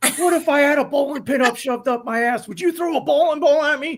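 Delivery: mad, stumbling, furious rant, pitched way up high. Retelling how Lonnie went after a kid over an answer: retelling Lonnie's furious rant. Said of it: "he got so mad".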